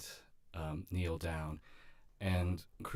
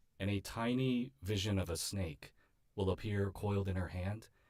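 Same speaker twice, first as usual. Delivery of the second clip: ordinary delivery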